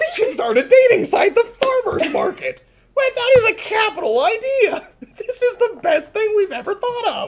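puppet-style voice like a felt puppet. Host pitching a farmer's-market dating site to co-hosts, Muppet voice. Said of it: "you sound like a Muppet when you make that voice".

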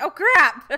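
sudden, quick exclamation of sinking dismay. Retelling spotting the seeker while spectating, imitating own shocked reaction. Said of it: "and I was like".

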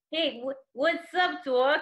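attempted Brooklyn accent. Trying a Brooklyn accent after being asked about it, attempted Brooklyn accent. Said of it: "you said the Brooklyn accent".

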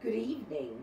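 ordinary delivery

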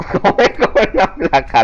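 high, loud, laughing, disbelieving protest.

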